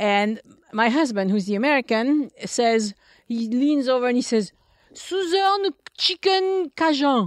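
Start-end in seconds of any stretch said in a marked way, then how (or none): 4.9-7.3 high, slow French pronunciation. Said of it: "say it the French way".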